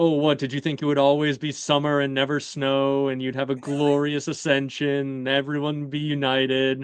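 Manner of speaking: mock sarcastic, scoffing, belittling, dismissive tone. Quoting a character mocking a woman, imitating a high sarcastic dismissive voice. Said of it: "he does like the high, little sarcastic, dismissive voice as he says that".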